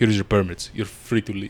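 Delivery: put-on Russian-accented delivery. Retelling what someone said when he came in, in a Russian accent. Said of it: "You said it like in like a Russian accent".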